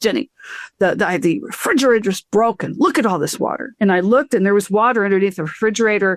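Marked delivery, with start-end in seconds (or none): 0.0-3.7 put-on Slavic accent with a Serbian flavour. Retelling what the husband said about the broken refrigerator: imitating a Slavic accent. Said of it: "he's Serbian, so it's got the, that, uh, Slavic accent".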